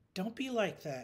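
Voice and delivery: light playful teasing. A woman teases her dog after it gives her a skeptical look. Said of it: "she teased".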